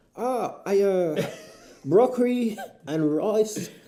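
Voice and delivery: very slow, drawn-out, high Australian accent creeping in. Answering a question about dinner, drifting into an australian accent. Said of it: "You kind of went Australian mid-word there".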